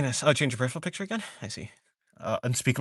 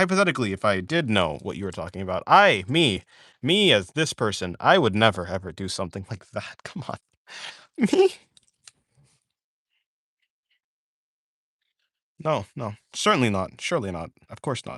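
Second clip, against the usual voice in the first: low, put-on innocence dripping with sarcasm; 4 semitones lower than usual. Answering whether they ever used the dark side of drawing: mock sarcastic denial. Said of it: "I'm being sarcastic".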